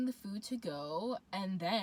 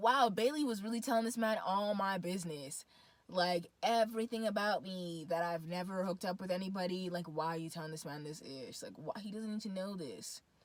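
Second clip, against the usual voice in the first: normal talking voice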